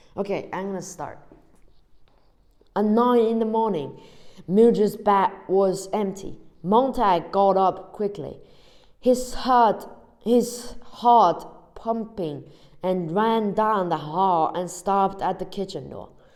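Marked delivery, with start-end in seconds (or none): 2.8-16.1 speaking in a British accent. Reading a passage aloud, in a British accent. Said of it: "to read as um, British accent again".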